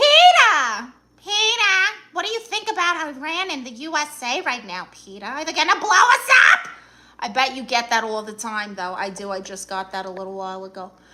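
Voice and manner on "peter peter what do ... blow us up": cartoon voice, high, swooping, stretched out, loud. Answering a viewer who says it sounds like Lois Griffin: Lois Griffin voice. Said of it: "you actually did the impression so good".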